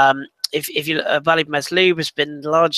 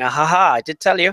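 acted-out smug, self-satisfied gloating with a laugh. Show guest recalls reacting to a prediction he made weeks back: retelling smug gloating. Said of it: "I was sitting there smugly going".

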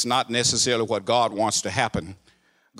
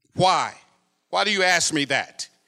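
put-on snippy, sassy tone full of attitude; 7 semitones higher than usual. A preacher retells answering a man's question in jail, a sassy reply. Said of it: "I tried to say it with enough attitude".

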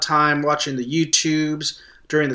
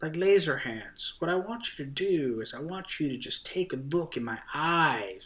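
put-on laid-back actor voice, quieter; 10 dB quieter than usual. Doing an impression of a terminator as Owen Wilson: Owen Wilson voice. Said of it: "that's my Owen Wilson impression".

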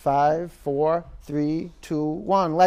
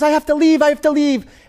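very high, loud, frantic panicking cry; 11 semitones higher, 8 dB louder than usual. Retelling how a woman in the tent begged to leave: imitating a panicking woman. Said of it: "she was, like, panicking".

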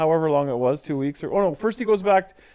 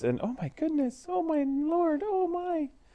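very high, soft, fakest-sounding surprise; 11 semitones higher, 9 dB quieter than usual. Retelling a proposal, the speaker mimics the woman's fakest surprise voice. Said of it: "she has like this fakest surprise voice".

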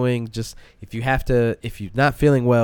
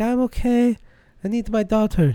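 put-on very high-pitched voice with a Spanish accent; 10 semitones higher than usual. Retelling what a woman in the men's bathroom said, in a spanish accent. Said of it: "thank you for the perfect the accent".

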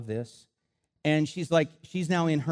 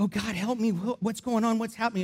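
put-on small, high, childlike little girl voice; 7 semitones higher than usual. Speaker retells what a 12-year-old girl said between demonic manifestations: imitating a little girl's voice. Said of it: "It would be her little girl voice".

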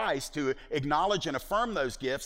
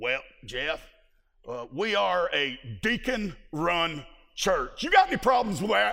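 rough, gravelly, very country rural voice; 4 dB louder than usual. Retelling a phone call from a church caller: gravelly, very country voice. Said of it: "he ate gravel for breakfast".

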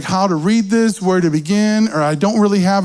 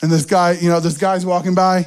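ordinary talk

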